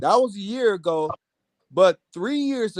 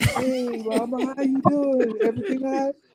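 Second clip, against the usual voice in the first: mock sweet-talking charmer voice, little, pitched up; 5 semitones higher, 3 dB quieter than usual. Retelling how a man greeted the speaker's mom, mimicking a sweet voice. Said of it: "got in this little sweet voice".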